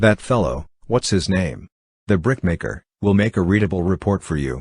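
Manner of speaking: ordinary delivery, nothing marked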